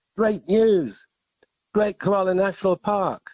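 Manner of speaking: mock shout, loud and high-pitched. Retelling shouting out as a speaker left the podium, in a loud shout. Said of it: "in my loud voice".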